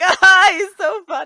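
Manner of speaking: words broken up by drawn-out hysterical laughter. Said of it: "laughing hysterically".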